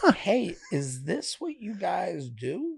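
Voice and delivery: mock hushed, curious, very soft, slow and drawn out. Retelling how they asked someone a question: retelling a curious question. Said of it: "I said it in a curious way".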